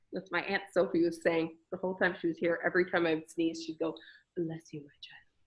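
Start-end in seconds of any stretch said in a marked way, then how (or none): 4.3-5.2 put-on very quiet, soft, hushed, murmured British accent. Quoting what her aunt said at every sneeze: imitating Aunt Sophie's British accent. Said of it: "But like with her British accent".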